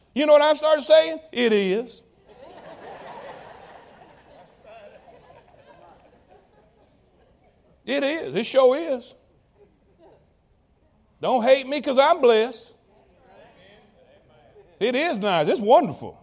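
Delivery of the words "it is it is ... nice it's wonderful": mildly tongue-in-cheek, facetious, quieter. Answering jealous people's remark about being blessed: a little facetious. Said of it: "I'm being a little facetious".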